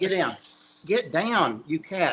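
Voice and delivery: scolding, high-pitched. Telling cats to get down while live on camera: yelling. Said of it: "who are you yelling at like that".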